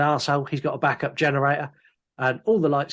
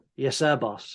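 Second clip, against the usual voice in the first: mock deferential, patronizing tone; 4 dB quieter than usual. Retelling how a handyman answers his boss: imitating a patronizing reply. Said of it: "The very patronizing".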